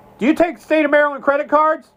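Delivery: acted-out, shrill, very high-pitched yelling. Retelling a cop at the pump calling out a question to him, retelling a yell. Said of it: "He yells out".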